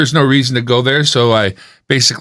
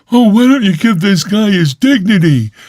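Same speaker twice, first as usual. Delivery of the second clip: high, derisive, mocking put-on voice; 8 semitones higher, 3 dB louder than usual. Retelling what the same guy says about dignity: mocking imitation of a guy. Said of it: "the same guy who's like".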